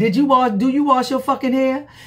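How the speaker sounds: acted angry snapping. Retelling a confrontation, imitating own angry snap with face balled up. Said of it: "with my face all balled up".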